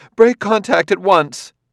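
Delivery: very high, loud, carrying call-out. After a man taunts her, a woman ends the contact, called out. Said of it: "called out".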